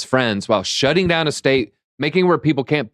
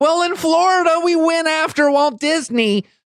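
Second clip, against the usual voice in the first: whining, pitched way up. Mocking a politician's accomplishments in imitation: Ron DeSantis's whiny voice. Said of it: "Ron has whiny voice".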